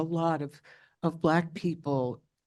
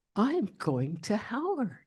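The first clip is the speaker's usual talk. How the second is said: play-acted proud tone, pitched up; 5 semitones higher, 4 dB quieter than usual. Retelling telling a professor at dinner where she is going: retelling a proud remark. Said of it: "I said proudly".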